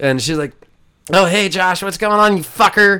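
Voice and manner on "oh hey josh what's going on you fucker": very high, loud, easygoing casual tone. Retelling meeting Paige at a bar: imitating Paige. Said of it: "that's a perfect Paige".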